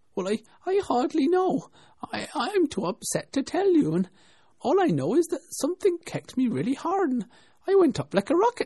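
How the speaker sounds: little squeaking voice, very high and loud. Reading the story aloud, Bill answers the others' questions: Bill's little squeaking voice. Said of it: "a little squeaking voice".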